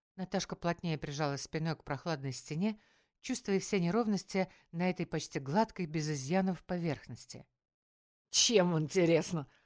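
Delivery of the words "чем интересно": snide, snarky, louder. Narrator reads a thug mocking a girl's threat, snide retort. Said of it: "ехидно парировал тот".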